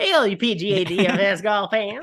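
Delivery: loud, slow, cheesy corny-guy voice.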